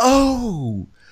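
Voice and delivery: high, slow, surprised gushing. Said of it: "Melissa goes".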